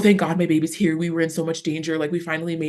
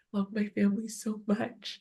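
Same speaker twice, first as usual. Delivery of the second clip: very quiet, hushed whisper under the breath; 4 semitones higher, 9 dB quieter than usual. Recalling lying awake in bed beside family at night, retelling a whisper under breath. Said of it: "I'm just like whispering it under my breath".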